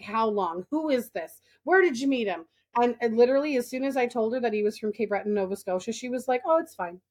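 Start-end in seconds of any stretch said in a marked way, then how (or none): 0.0-2.5 grilling, probing interrogating tone. Retelling how a woman questioned her about a relationship, mimicking a grilling interrogation. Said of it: "she's like grilling me on this relationship".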